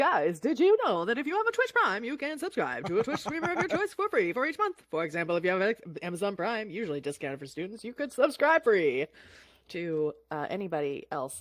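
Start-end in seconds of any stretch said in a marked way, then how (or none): 0.0-9.1 put-on loud, swooping old-time fifties radio announcer voice. Streamer addressing the chat, in a fifties announcer voice. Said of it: "Can I do this in like a fifties announcer's voice?".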